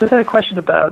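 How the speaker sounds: high voice, talking through leftover laughter. A longtime fan asks the hosts a question over applause, laughing while talking. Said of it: "I'm laughing from the laughter".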